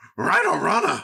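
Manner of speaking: put-on cartoon dog character voice. Answering a request for an impression: Scooby-Doo voice. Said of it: "a Scooby-Doo impression".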